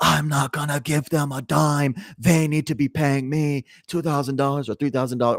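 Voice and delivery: angry yelling, high-pitched, loud and furious.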